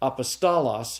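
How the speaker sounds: apostolos, stress moved to another syllable. Teaching consistent pronunciation for memory work, shifted stress in apostolos. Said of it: "depending upon what syllable I accent".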